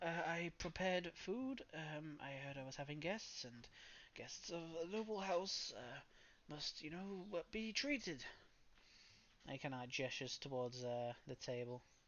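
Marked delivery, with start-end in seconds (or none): 0.3-8.2 put-on old man character voice. Voicing an old man who greets the guests: old man character voice. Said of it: "the old man goes".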